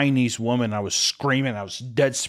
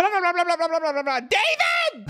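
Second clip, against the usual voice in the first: mock very high swooping calling-out scream. Retelling a dream of screaming for a lost child: imitating screaming for David. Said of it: "I was yelling out for David".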